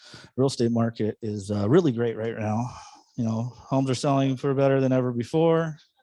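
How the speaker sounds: listless, level monotone, very low, low-energy. Mimicking a typical real estate video pitch, with put-on low-energy delivery. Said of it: "we all have those seen those videos and they're just like ... I fell asleep. So energy".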